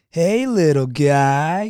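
very loud, high voice with "guy" drawn out. Retelling a greeting from a friend at a comedy club bar: imitating a loud shout. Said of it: "real loud".

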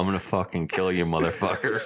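put-on muttering under breath. Acting out what the listener said during a game, imitating muttering under breath. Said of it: "underneath your breath".

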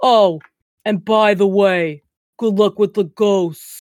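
put-on Brooklyn accent appearing suddenly. Describing a silly guy talking to the team at the end: put-on Brooklyn accent. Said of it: "like Brooklyn accent for some reason".

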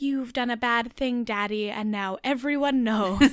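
put-on eerie, unsettling, very creepy voice. Retelling what she said to her daddy, imitating a creepy voice. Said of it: "in the creepiest way possible".

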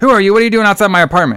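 high-pitched, demanding yelling. Retelling a scene where a girl yells at him: imitating someone yelling. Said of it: "she's yelling at him".

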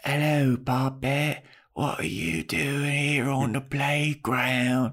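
fully in-character, put-on female vampire voice. Retelling a TV episode scene, imitating Drusilla. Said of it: "Drusilla shows up, Spike's girlfriend, and she's like".

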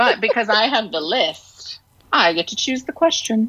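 playful, very evil villain-style voice. Holding the question list and telling the group she gets to choose, in a very evil voice. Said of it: "you're saying that in a very evil voice".

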